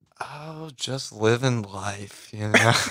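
soft, joyless, gloomy and downbeat. Asked how the past couple of weeks went, he answers, sounding depressing. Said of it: "that sounded really depressing".

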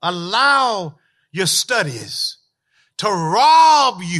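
slow, measured delivery. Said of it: "I want to say it slow".

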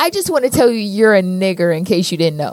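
ordinary delivery

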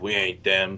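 muttered low, irritated. Retelling a Walking Dead scene where Daryl gets pissed off: terrible Daryl impression. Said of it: "that's a terrible Daryl impression".

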